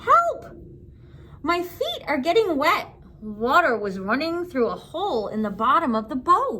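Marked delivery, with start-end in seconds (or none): 0.0-2.9 high, squeaky little mouse voice. Narrator reading a story voices the little mouse Horatio, squeaky Horatio mouse voice. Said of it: "But Horatio squeaked".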